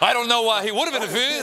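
put-on laughing old-style stand-up comic impression. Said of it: "that Jackie Mason voice".

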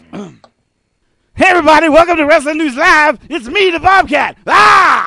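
very high, loud voice. Asked to get Bobcat on the phone, doing a Bobcat Goldthwait impression. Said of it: "could do a better Bobcat Goldthwait than he".

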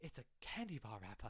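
dead sincere, earnest delivery with every R dropped. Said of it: "he says it earnestly with no R's".

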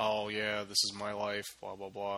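soft, flat, dull, unvarying monotone. Speaker mimics how the other person talks, imitating a flat monotone. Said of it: "that monotone".

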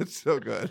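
laughing too hard to speak clearly. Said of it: "I'm laughing too much to get through".

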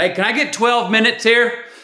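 loud, high-pitched shout.

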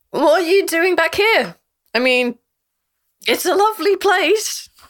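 put-on heavily drunk speech. Voicing a character who greets Sultana with a hug: very drunk. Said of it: "She is very drunk".

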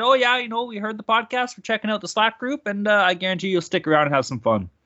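put-on Canadian accent. Podcast host telling listeners what to say in the slack group, canadian accent. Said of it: "Do they have to say it with that Canadian accent like that".

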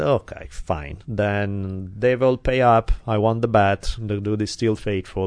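ordinary delivery

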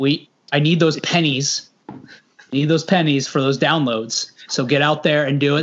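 ordinary talk, nothing marked

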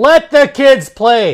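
loud, slow, stretched-out rousing yell. Recapping a hockey game before intermission: yelling. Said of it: "but I'm gonna yell it".

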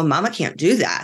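ordinary delivery

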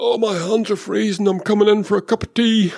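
put-on Birmingham (Brummie) accent. Retelling what a driver said on the radio after passing the pits, in a Brummy accent. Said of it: "In his best Brummy accent".

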